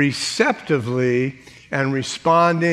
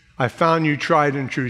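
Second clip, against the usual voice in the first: ordinary talk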